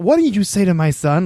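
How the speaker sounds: feisty, loud, high-pitched voice. Retelling how his mom confronted the man outside, imitating feisty Jackie.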